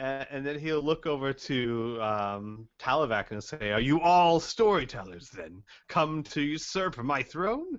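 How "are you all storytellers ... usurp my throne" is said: cheerful, good-natured, jolly, swooping taunting tone. Speaking in character to the party, asking if they are storytellers: jolly. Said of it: "he says in a very jolly look on his face".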